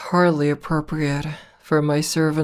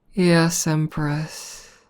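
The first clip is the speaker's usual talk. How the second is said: mock mewling whiny tone. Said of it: "that a little mewling, whining tone your voice takes on".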